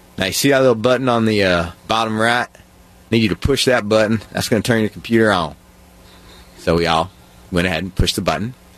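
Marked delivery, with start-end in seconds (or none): 0.2-5.6 put-on Appalachian accent. Retelling the correctional officer's instructions at the computers, in an Appalachian accent. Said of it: "I'm going to do the Appalachian accent".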